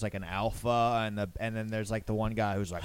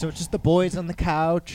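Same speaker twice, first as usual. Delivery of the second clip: loud, drawn-out theatrical stage voice; 7 semitones higher, 7 dB louder than usual. Imitating another speaker's line when they arrived: imitating a theatrical voice. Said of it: "Theatery voice".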